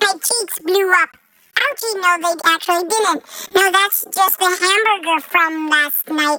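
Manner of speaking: odd chipmunk character voice. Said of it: "I sound weird, I know".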